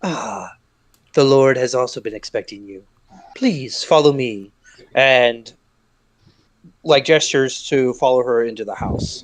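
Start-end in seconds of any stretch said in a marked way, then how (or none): 0.0-4.5 put-on, very calm, soothing voice. Voicing a woman who greets the visitor and leads them in: imitating a calm, soothing voice. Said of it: "she speaks in a very calm, very soothing voice".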